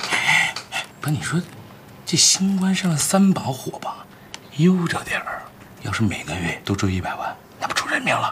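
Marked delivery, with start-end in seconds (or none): 5.8-8.3 quiet, low, muttered grumble under breath. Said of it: "嘀咕什么呢？有话大声说啊！".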